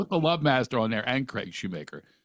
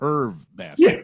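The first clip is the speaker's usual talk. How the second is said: usual speaking voice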